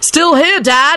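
high, loud shout at full voice. Narrating George calling out to his dad: yelled. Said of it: "George yelled".

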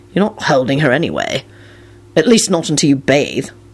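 plain reading voice

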